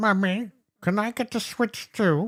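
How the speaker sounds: put-on very high, slow voice, like a toddler. Acting out someone begging for a Switch: imitating Peppa Pig. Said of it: "you sound like Peppa Pig".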